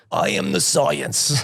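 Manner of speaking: bad, creaky, rough-edged put-on voice. Mocking how everyone talks about science, a speaker does a really bad Fauci impression. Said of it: "here's a really bad Fauci impression".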